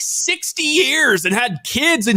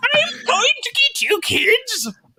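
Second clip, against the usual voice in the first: put-on creepy horror-movie old lady voice, much higher pitch; 12 semitones higher than usual. Asked to try an old lady voice, the speaker does a horror-movie old lady voice. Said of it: "you might be a good horror old lady".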